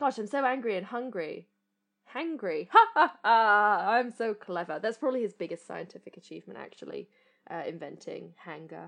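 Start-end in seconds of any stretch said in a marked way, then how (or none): 0.0-4.8 slow and loud, with a chuckle. Imitating Professor Hayling laughing once he realises he is hangry: imitating Professor Hayling. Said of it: "He's like".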